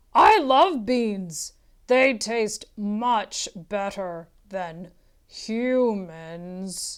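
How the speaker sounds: booming, growling giant voice, drawn-out ending. Reading a story aloud, voicing the giant holding Jack, in a growling, booming giant voice. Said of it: "hairy giant stood in front of [name]. / hairy giant stood in front of [name]. / the giant growled. / Then a voice boomed".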